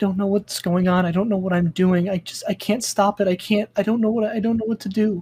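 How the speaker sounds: high-pitched whimpering in fear. Recounting the scene, the narrator voices Riley whimpering, scared. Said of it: "you hear that she's like whimpering".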